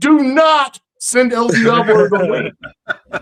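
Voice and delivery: put-on shrill, very high, stretched-out screaming. Retelling a man's reaction to a comment: retelling someone screaming. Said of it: "and he's screaming".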